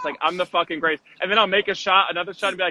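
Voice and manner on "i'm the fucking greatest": put-on sarcastic boastful tone. Retelling trash talk after making shots in basketball: imitating own sarcastic boast. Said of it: "just sarcastically I'll say".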